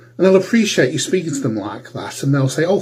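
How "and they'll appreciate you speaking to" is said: plain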